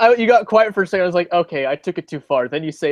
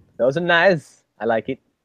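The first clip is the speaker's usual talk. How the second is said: put-on Eastern European accent. Reacting to a picture on the wall, the speaker does a Borat impression. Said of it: "That was my Borat impression".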